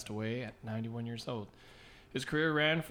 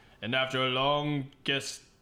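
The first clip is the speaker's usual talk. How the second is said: put-on spooky accent. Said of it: "What's with the accent?".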